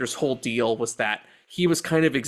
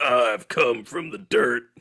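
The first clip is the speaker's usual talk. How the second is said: unhurried, slow documentary wrestler-narrator voiceover. Describing a documentary narration, imitating the Undertaker. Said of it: "He's like".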